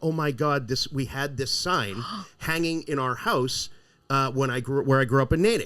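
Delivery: normal talking voice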